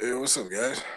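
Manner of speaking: sounding tired and weary. Greeting the group, who then say he sounds tired: tired voice. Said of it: "you sound tired".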